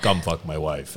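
heavy, thick, put-on Eastern European accent. Retelling what a guy said after a bathroom break, in a thick Eastern European accent. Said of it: "puts on this thick Eastern European accent".

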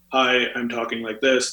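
level, unvarying monotone with no pitch change. Imitating people who come in sounding very monotone: monotone. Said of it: "they sound very monotone. They sound very".

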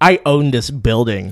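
slow, put-on haughty, stuck-up, snooty tone. Retelling what a building owner said to a group: imitating a snooty tone. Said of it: "looks at us, like, all fucking snooty and goes".

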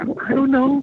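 imitated frightened voice. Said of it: "Scared little kid".

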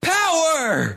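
yelling, pitched high. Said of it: "Akbar yells".

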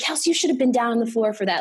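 put-on mild half-yell, scolding tone. Recalling a high school game, a former player imitates a woman yelling at her. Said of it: "she's yelling at me the whole time".

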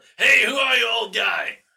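booming, bellowing shout, pitched way up. [name] spots an unknown old man and greets him, bellowing out. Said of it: "[name] just kind of bellows out".

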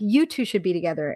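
ordinary talk, nothing marked

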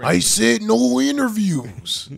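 very loud, high, rough yell. Repeating a wrestler's line refusing interviews: Macho Man impression. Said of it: "That's a good one".

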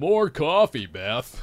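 casual, offhand, bossy tossed-off delivery. Quoting a character's impression of Dave: deep-voiced impression of Dave. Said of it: "that's his impression of Dave as a deep voice".

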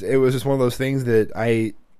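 ordinary delivery

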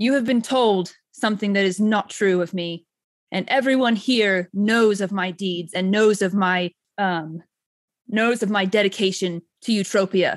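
booming, resounding voice ringing out. Playing a winged character pelted with arrows, addressing the crowd: booming voice. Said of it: "my voice just like booms throughout".

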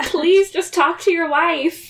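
mock desperate, high, begging, pleading yell. Retelling watching a tense drama, imitating shouting at the TV. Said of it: "I just kept shouting at the T V".

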